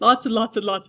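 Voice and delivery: speaking through a yawn. Explaining a theory to listeners, yawning while speaking. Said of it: "I'm sorry, I'm yawning".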